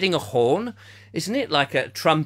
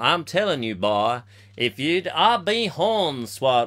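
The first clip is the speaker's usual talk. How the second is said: bad fake Texan accent, slower. Speaker tries out how Texans talk, admitting it's not done well; bad Texan accent. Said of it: "What part of America is that accent".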